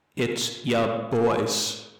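loud put-on robot voice, shouted. Storyteller voices a character shouting as he holds up his shield: shouting in robot voice. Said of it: "shouting out in his robot voice".

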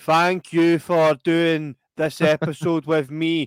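stiff, schoolkid-like read-aloud voice. Retelling the end of a podcast episode, imitating James English reading a promo. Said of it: "he immediately turns into a primary six pupil getting made to read something in front of the class".

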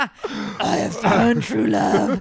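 very loud, belted creepy creature voice. After the other speaker says the Gollum voice is coming, speaker does the Gollum voice. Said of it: "The Gollum voice".

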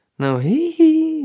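put-on high, slow, loud little boy giggle. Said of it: "Don't giggle like a little boy".

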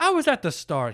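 put-on high Irish-accented priest voice. Retelling what a priest said on stage: imitating Father John's Irish accent. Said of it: "He was Irish".

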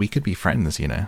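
ordinary delivery

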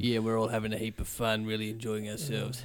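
low, flat, drab, lifeless monotone. Showing how sitting down doing nothing sounds: flat, drab monotone. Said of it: "we end up sounding a bit like this. Bit drab. you sort of go a bit monotone".

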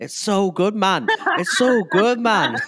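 put-on thick Liverpool Scouse accent, very high and loud. Retelling a man thanking the staff for the ice cream, in a thick scouse accent. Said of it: "really thick like Scouse accent".

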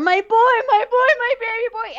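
play-acted, very high, shrill screaming. Recounting a scene where a mother pounds on the bathroom door, imitating her screaming. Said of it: "she's screaming".

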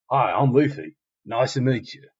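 put-on Australian accent, spoken slowly. Retelling a scene where a character introduces himself: Australian-sounding Luffy voice. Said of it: "thinking that Luffy's kinda, like, Australian".

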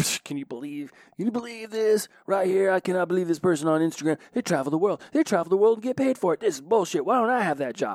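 high, loud, envious, jealous griping. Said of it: "Envious and jealousy".

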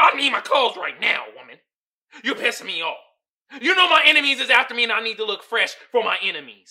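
very loud, high, furious, demanding angry tirade. Retelling how the swindler demanded his clothes back: imitating an angry man. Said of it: "And he all pissed off".

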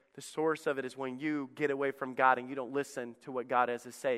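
ordinary talk, nothing marked

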